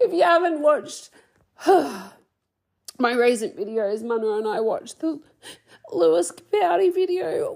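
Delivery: speaking while crying, voice tearful. A host recording an episode speaks to listeners while crying. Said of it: "Now I'm going to cry again".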